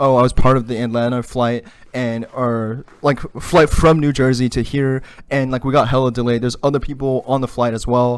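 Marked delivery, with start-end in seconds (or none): none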